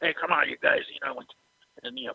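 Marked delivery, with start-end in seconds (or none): 0.0-0.8 put-on voice, rough and gravelly. Retelling a trainer slapping the mat with his cane: imitating Tough Tony's rough gravelly voice. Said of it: "he had that rough, gravelly voice".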